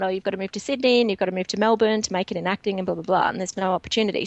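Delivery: ordinary delivery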